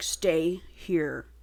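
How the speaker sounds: rough, bossy, domineering gravel voice. Retelling a dominating book character telling her to stay: imitating gravelly voice. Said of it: "It's all gravelly".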